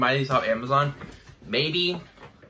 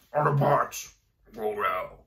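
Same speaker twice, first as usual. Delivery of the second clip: slow, stiff, mechanical put-on robot voice; 3 semitones lower than usual. Retelling practicing the voice at work alone: put-on robot voice. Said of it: "I'll just go like".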